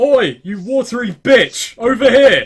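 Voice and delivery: yelling. In a game, a player acts out what they do while defying danger: yelling. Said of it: "I just start yelling".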